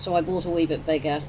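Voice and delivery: ordinary talk, nothing marked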